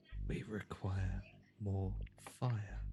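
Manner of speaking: soft, slow half-whisper. Voicing Azimuth over the comms during a fight: half-whispering over the comms. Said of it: "whisper over the comms".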